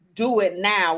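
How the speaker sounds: put-on stern tone. Speaker acts out how God sometimes speaks, mock-stern command. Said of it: "with a stern voice".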